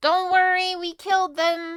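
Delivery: very high, drawn-out shout. A player's character yells down to those below, yelling down. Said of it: "I'm gonna yell down".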